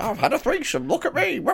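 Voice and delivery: high, squeaky, boastful crowing impression voice. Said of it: "does an impression of himself when he's trying to impersonate me".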